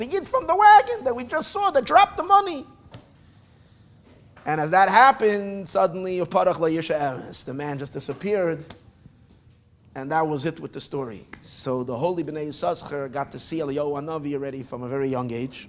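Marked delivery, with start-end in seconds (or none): 0.0-2.7 put-on high-pitched voice of a little five-year-old boy. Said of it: "He's a little five-year-old boy".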